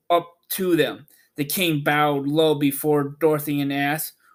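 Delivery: ordinary delivery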